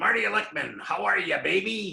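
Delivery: very gruff, loud, rough, creaky voice. Retell the phone call where he introduces himself to Jeff, in Marty Lickman's very gruff voice. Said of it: "in a very gruff voice".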